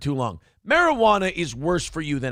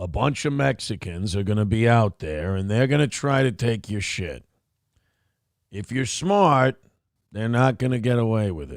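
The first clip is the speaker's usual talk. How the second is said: gruff, disinterested put-on voice, lower; 7 semitones lower than usual. Showing a Mike Ehrmantraut impression, speaking gruffly and disinterested: Mike Ehrmantraut impression. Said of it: "my Mike Ehrmantraut impression".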